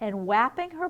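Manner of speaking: plain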